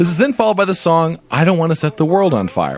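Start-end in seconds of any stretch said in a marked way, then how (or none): none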